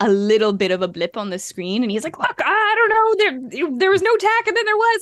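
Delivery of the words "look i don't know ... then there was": mock, very high, flustered, frantic babble. Recapping a scene, imitating a man going crazy. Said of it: "he's obviously like going crazy".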